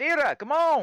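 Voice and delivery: very high-pitched, loud calling yell. Calling a companion to come take her turn on watch, yelling. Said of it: "Why are you yelling?".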